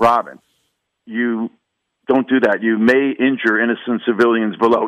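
low, dry, flat, deadpan delivery. Telling a story in which Batman stops Robin, speak his line in a deadpan Adam West Batman voice. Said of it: "you know the way Adam West was doing that deadpan delivery".

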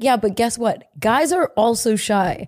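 ordinary talk

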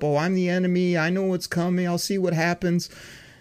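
jokey tone, laughing while speaking. Mocking what a former quarterback said to the media: imitating Matt Stafford laughing it up. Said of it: "laugh it up".

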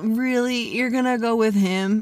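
teasing, irritating tone. Describing an imagined scene of Ross leaning next to the dude, in a Ross impersonation. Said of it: "I love your Ross impersonation".

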